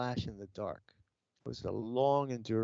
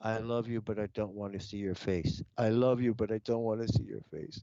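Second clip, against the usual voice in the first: put-on crying, tearful voice; 2 semitones lower than usual. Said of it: "I'm crying, man".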